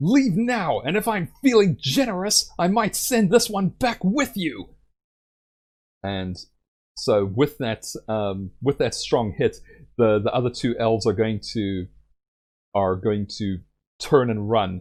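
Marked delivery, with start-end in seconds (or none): 0.0-4.7 warrior voice yelling, pitched very high. Playing a warrior battering her shield, yelling a threat at elves: yelling in character. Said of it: "she's gonna yell".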